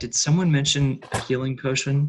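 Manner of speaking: whispered voice. Asking another player about a healing potion during a listen check: whispering. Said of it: "I'm gonna whisper while you're doing that".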